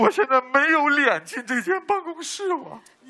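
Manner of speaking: slow, choked-up voice catching in tears. Called in from the hallway, he tells the teacher he won't come in, voice choking with sobs. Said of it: "老师他哽咽了".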